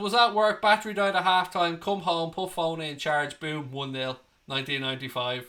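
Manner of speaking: normal talking voice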